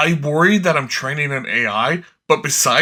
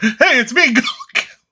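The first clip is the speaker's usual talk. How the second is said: loud shout in a very high-pitched voice; 9 semitones higher than usual. Recalling someone in the basement mimicking Goku each round: retelling a shouted Goku line. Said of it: "the basement was just shouting".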